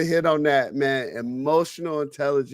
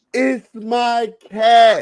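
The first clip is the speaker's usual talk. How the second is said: very loud, high, blubbering, wailing boo-hoo sob; 7 semitones higher, 8 dB louder than usual. Retelling an upset airman's complaint about a cat: imitating someone crying.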